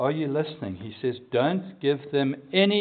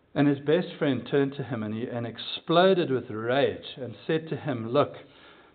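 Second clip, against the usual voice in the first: plain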